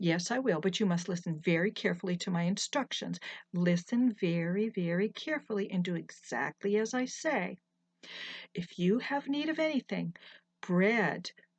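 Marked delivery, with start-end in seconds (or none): none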